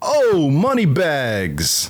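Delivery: put-on strong New York accent. Retelling what the New York man at the counter said: imitating a New York accent. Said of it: "super New York guy behind the counter".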